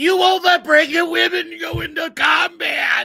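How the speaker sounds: raw, very high, very loud screech. Retelling clips of women screaming at someone: imitating women screaming. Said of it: "these women just screaming at him".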